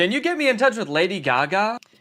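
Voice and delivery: ordinary talk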